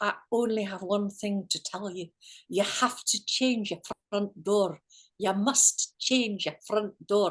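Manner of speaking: put-on Scottish accent. Retelling a medium's insistent message while banging his fist: imitating a Scottish accent. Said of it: "he'd got this Scottish accent".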